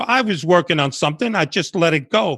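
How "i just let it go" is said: ordinary talk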